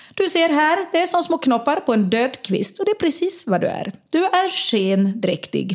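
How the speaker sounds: put-on poor Finland-Swedish accent. Retell a woman explaining a zoomed-in picture to Emma, in a bad Finland-Swedish accent. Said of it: "nu är hon finlandssvenska, jag kan inte härma det särskilt bra".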